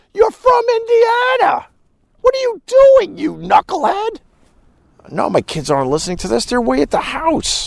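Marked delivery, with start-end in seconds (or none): 0.2-4.2 very high, play-acted screaming. Retelling yelling at the tv about an actor: imitating own past screaming. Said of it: "I'm screaming at the T V going".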